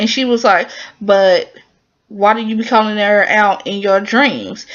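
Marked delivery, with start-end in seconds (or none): none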